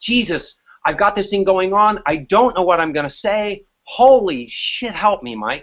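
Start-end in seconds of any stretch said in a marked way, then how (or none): none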